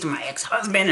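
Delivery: ordinary delivery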